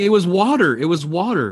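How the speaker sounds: put-on play-acted teenage girl yell, mild, held back, repeated. Retelling how teenage girls reacted to a drawn pistol: imitating girls screaming. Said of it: "they're screaming".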